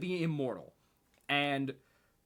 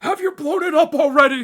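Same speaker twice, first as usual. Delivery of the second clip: very high-pitched, very loud shout; 13 semitones higher, 15 dB louder than usual. Speaker requotes a character's line, in a Christopher Lloyd-like voice. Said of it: "I do that voice so perfectly".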